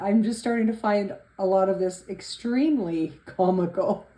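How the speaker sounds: laughing through the words. Answering questions after apologizing for laughing, laughing while talking. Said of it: "I'm sorry, I'm laughing".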